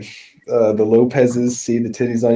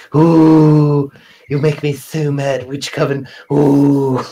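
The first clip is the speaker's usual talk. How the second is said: loud cartoon character voice, long stretched "ooh"; 3 semitones higher, 5 dB louder than usual. Riffing on how to voice a character, the speaker does a Stewie Griffin voice. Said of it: "have him go around like Stu Griffin".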